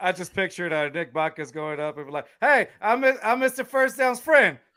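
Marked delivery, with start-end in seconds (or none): 2.4-4.5 put-on impression of a man's voice, slower. Picturing how Nick Buckets would introduce himself, doing a Nick Buckets impression. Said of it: "that's my Nick Buckets impression".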